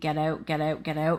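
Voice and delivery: plain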